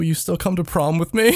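teary, pleading tone, near crying. Retelling what an ex said when about to cry: imitating a tearful plea. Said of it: "welling up 'cause she's about to start crying".

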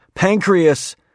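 sudden, high, loud blurt.

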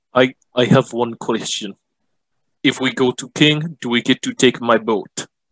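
bad put-on Jamaican accent drifting back to Russian. In character, asking the others a question, slipping into a Jamaican accent. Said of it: "Did you just adopt a Jamaican accent now?".

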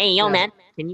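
casual, high-pitched put-on voice. Imitating a funny guy who has a high-pitched voice, high-pitched put-on voice. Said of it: "He has a high-pitched voice, too. Like".

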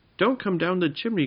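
frightened, alarmed cry, very high pitched. Jinx calls up to Windy Wizard on the roof, in fright. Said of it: "called Jinx in fright".

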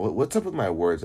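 ordinary talk

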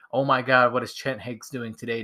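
plain

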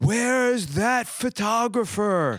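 big booming bellow, pitched very high. Retelling what a man said while everyone waited after the show, in a bellowing James Earl Jones impression. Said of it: "In that big bellowing voice".

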